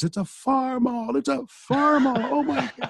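acted top-of-the-lungs shriek, very high and loud. Retelling a jogger's excited reaction to the tractor: imitating someone screaming loudly. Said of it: "he was screaming at the top of his lungs".

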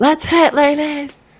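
very high, loud, mock cheering voice.

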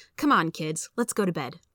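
ordinary talk

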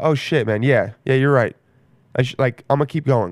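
plain

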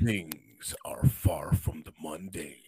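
whispered, hushed, breathy movie trailer narrator voice. Asked to switch it up, the speaker carries on: movie trailer voice. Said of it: "There you go".

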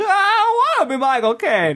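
very high-pitched comic character voice. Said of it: "that's Don Knotts".

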